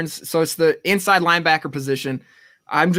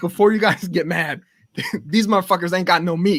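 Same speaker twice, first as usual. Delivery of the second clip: put-on voice, very angry and worked up. Retelling what a dude in the Taco Bell line said: imitating someone super pissed off. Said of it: "super pissed off".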